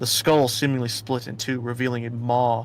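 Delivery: plain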